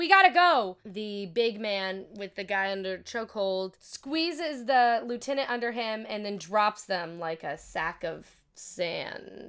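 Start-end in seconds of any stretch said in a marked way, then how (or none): 0.0-0.8 yelling, higher and louder. Voicing a woman who warns Jack it was a setup: shouting. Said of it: "shouts out".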